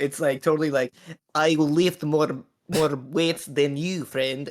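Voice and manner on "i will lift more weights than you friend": terrible, awful put-on Russian accent. Describing a badly dubbed character from Moscow, bad Russian accent. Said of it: "She like has the worst Russian accent".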